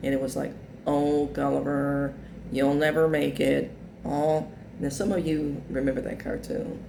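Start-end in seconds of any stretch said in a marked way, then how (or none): 0.9-3.7 slow, whiny, drawn-out drawl. Quoting a cartoon character's line: Trag's whiny drawl. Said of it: "this kind of drawl, whiny voice".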